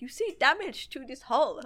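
really bad, fake, put-on Russian accent. Telling a story, Yuri hops out, turns around and speaks: Yuri in terrible Russian accent. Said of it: "that was my terrible Russian accent".

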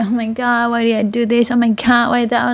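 ordinary talk

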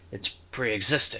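flat, expressionless. Narrator reads Adam continuing his reply to a reluctant listener, deadpan.

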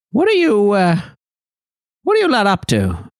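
swooping, bird-like creature voice. Voicing a bird-like creature that suggests a route: voicing a bird-like creature. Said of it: "turns his head back and forth and says".

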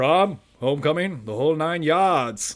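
put-on slight New England accent on the word 'yards'. Quoting a movie scene, imitating Clancy Brown with slight New England accent. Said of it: "a little bit of New England accent comes out on yards".

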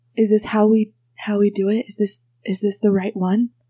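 soft, quiet, hushed female voice. A voice heard between sleeping and waking asks a question; quiet female voice. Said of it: "you hear like quiet voices and you hear a female voice".

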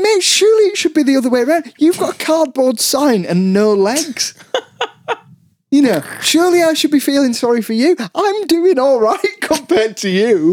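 high-pitched, incredulous retort.

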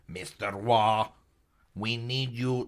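robot-like alien voice. Imagining an alien coming down and asking for help, robotic alien voice. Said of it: "that's more robot".

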